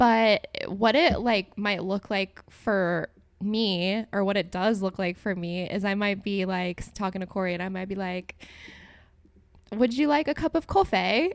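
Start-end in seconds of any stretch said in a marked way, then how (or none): 9.7-11.3 abrupt switch to pitched-up British accent. Showing how she might suddenly talk to Corey, in a sudden British accent. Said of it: "all of a sudden British or something".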